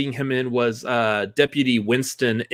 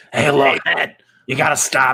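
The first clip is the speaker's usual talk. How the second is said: put-on raspy celebrity voice. Doing a Harvey Fierstein impression after the others praise his voice. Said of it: "I love that guy's voice".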